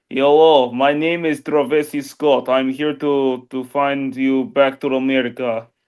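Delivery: fake, put-on Russian accent. The speaker shows how he speaks, trying a put-on Russian accent. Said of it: "I try to get like a Russian accent".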